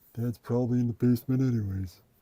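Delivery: put-on child voice poking fun. Father telling what his kids think of where he is, imitating his kids. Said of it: "That's the way I do an impression of people".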